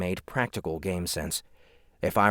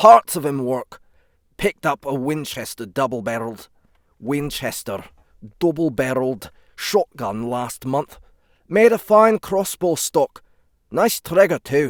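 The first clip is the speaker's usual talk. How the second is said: loud, amateur put-on Scottish accent; 7 semitones higher, 9 dB louder than usual. Reading a character's lines aloud: Scottish accent. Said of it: "the accent or the voice for s-, for Scottish".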